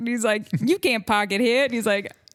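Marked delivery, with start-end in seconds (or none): 0.6-1.6 put-on Boston accent, louder. Quoting an actor from a car commercial: boston accent. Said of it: "used the Boston accent".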